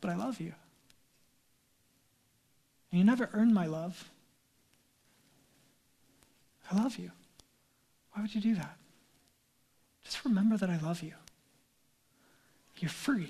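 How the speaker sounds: soft, calm and loving voice. The speaker imagines Jesus speaking calmly, imitating Jesus, calm and loving. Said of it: "calmly saying, with dear love in his voice".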